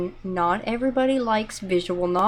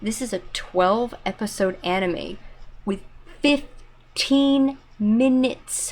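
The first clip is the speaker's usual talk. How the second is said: very slow, deliberate, word-by-word delivery. Saying it for the people who are going to yell at him, spoken very slowly. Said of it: "I'm going to say this very slowly".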